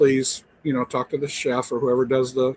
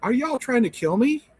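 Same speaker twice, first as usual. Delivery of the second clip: play-acted playful ribbing tone, very high pitch; 11 semitones higher than usual. Retelling a complaint at the concierge desk: retelling own joking question. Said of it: "in a joking manner".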